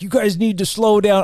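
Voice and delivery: angry scolding.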